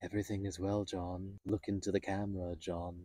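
soft, hushed, calm, chilling computer voice. Imagining a camera speaking to him, in a soft, calm HAL voice. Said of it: "soft, calm, terrifying voice".

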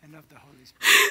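speaking in a whisper. Prompting ring vows line by line for the couple to repeat: whispering. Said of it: "I'm gonna whisper".

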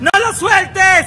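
urgent, slow, loud, drawn-out yell.

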